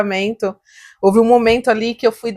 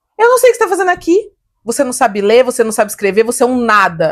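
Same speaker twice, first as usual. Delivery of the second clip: ordinary talk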